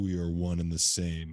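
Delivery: deep, crazy voice, dropped low. Retelling a voice that spoke into the speaker's brain, in a deep, crazy voice. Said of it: "this fucking deep, crazy voice".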